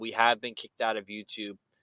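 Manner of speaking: normal talking voice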